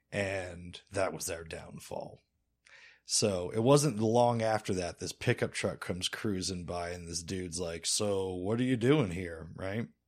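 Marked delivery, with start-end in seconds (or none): 7.8-9.4 put-on Colorado mountain accent. Retelling what a pickup truck driver asked, in a Colorado mountain accent. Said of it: "replace the weird accent with a Colorado mountain accent".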